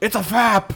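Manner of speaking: very high, loud, alarmed, blurted out. Retelling an internet video's Admiral Ackbar line: Admiral Ackbar voice. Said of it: "And Admiral Akbar face, and he goes".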